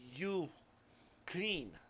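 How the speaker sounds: terrible, timid, put-on Japanese accent. One of the uniformed staff finally comes forward to speak, in an awful fake Japanese accent. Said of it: "my awful, terrible Japanese accent".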